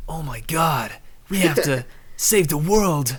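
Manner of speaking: breathy, high American anime dub voice. Speaker mocks American voice actors in anime dubs, in a breathy dub voice. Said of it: "the same like breathy voice".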